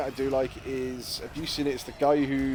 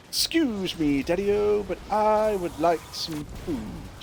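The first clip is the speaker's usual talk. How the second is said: put-on high, slow, small childlike voice; 7 semitones higher than usual. Voicing the pet dog talking to its owner, in Charlie Dog's voice. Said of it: "Charlie Dog's voice when he talks to".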